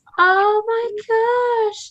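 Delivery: overwhelmed, high, slow, drawn-out gasp.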